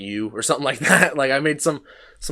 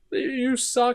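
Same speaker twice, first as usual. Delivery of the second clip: acted tearful crying scream, much higher pitch; 13 semitones higher than usual. Retelling a fight with their coach, the speaker repeats their words, retelling a tearful scream. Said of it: "I'm screaming, crying at him".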